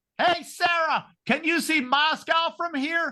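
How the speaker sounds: play-acted very high, slow, drawn-out shout. Retelling calling out to a candidate at an airport, retelling a scream. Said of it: "and I screamed".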